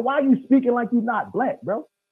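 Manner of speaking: loud, heated, challenging tone. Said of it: "that's the only time I lost my temper".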